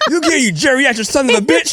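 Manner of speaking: high yell through laughter. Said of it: "where he was yelling at old dudes like".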